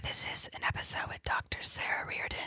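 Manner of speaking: soft, hushed, breathy whisper. Introducing the episode's guest, whispering. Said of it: "Why are you whispering?".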